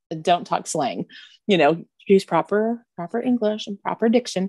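plain

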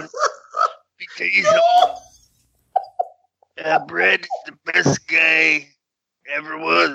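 bad, swooping wrestler-promo voice, up and down. Imitating how the bad impersonation sounded: Stu Hart voice. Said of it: "He sounded more like Stu Hart".

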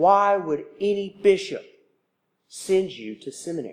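imitated muttered grumble under the breath. Retelling a past reaction to classmates' beliefs: imitating a grumble under the breath. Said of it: "grumbled and complained under my breath".

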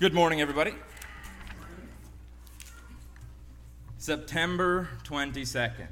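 grave, heavy, somber and solemn tone. Greeting everybody at the start of the show, somber tone. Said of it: "Can you hear the somber tone in my voice?".

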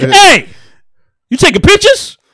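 put-on, loud yelling, pitched way high. Retelling confronting someone who took a picture of them, retelling a yell. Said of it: "why are you yelling at me?".

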